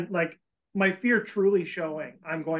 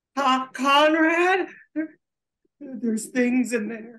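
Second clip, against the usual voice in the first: really high, slow voice tinged with terror; 6 semitones higher than usual. Warning Conrad about animals in the barn, in a high-pitched, terrified voice. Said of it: "in like a really high pitched voice that's just like very obviously tinged with pure terror".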